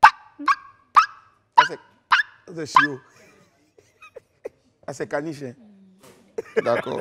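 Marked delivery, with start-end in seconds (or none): 0.0-1.6 very high, loud, yapping puppy voice. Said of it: "Faut, faut me faire maintenant le chien".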